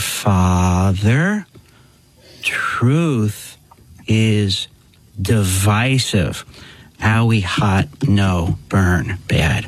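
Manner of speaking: talking very, very slowly. Retelling how people talked to him, speaking very, very slowly. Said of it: "they talked to me very, very slowly".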